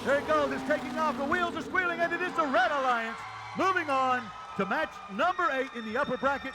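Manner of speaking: high, climbing excited voice.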